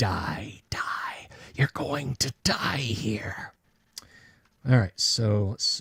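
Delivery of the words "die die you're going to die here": whispered, seething monster voice. A game narrator voices a struck creature at the players: seething creature voice. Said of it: "it's just it's seething at you".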